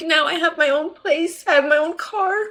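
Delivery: sobbing while talking. Telling viewers how life turned around, ugly crying. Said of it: "I'm ugly crying right now".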